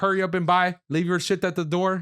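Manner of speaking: put-on Indian accent. Retelling what the corner store clerk would say: imitating a stereotyped indian store clerk.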